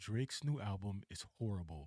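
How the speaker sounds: very low, quiet deadpan. Describing someone staring straight into a camera before a hot take: imitating a flat monotone. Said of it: "looking straight into the camera with like a monotone".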